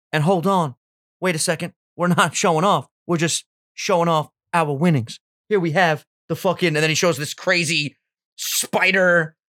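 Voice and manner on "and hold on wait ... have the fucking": put-on showing-off boxer voice. Imitating a rich boxer giving a garage tour: Floyd impression. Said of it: "That's a good impression".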